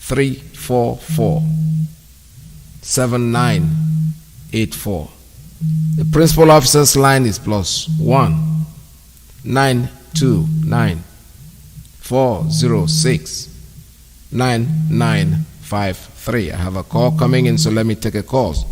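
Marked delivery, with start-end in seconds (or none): 0.0-16.5 much slower than usual. Radio host reads out phone lines after a complaint he read too fast, very slowly. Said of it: "I will read the numbers very slowly now".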